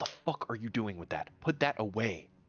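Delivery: angry, confrontational, scolding tone. Acting out a scene with Hank getting out of the car, hushed angry tone. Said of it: "in kind of like a like a hushed angry tone".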